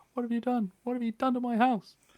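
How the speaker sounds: piercing, very high, shrieking scream. Voicing a woman who runs around the corner at intruders: screaming woman. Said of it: "a woman runs around the corner screaming".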